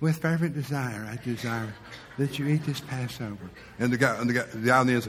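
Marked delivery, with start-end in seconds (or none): 0.0-3.5 put-on voice, much quieter, lower and slower. Acting out Jesus speaking to the apostles, too quiet for them to hear. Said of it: "speak up, Lord, I didn't hear".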